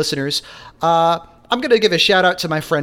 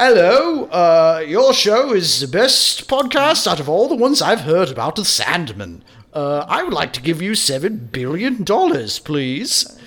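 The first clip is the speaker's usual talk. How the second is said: silly, daffy put-on British accent. As [name] himself, phoning the podcast with an offer, speak in a daffy British accent. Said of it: "my daffy British accent number 3".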